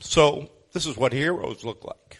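loud tearful crying speech. Speaker honoring a couple who ran a bus ministry, crying while speaking. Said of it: "And I'm sorry I'm crying".

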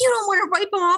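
frantic freaking out, pitched way up high. Recounting answering Kenny about the dog, the speaker retells a flip-out. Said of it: "just flipped out about the dog".

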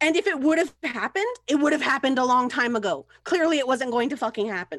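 high-pitched yelling. Mid-argument in a roleplay scene, in character: yelling. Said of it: "I'm yelling".

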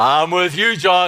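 play-acted big, booming, loud, full, resounding voice. Speaker calls out to God and answers himself in God's booming voice. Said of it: "I can almost hear His voice booming back at me".

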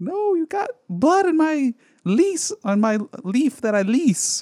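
very high-pitched comic delivery. Recalling a comedy's funny bits, the speaker quotes Stu in a high-pitched impression. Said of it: "That was a high-pitched saying".

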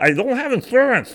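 very high-pitched, lisping tweaker character voice. Trying to do their best tweaker voice: lisping tweaker voice. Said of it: "I'm trying to do my best tweaker voice".

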